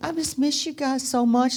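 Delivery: put-on tearful crying. Retelling a memory, answering his question about the crying, imitating own crying. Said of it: "and I'm crying".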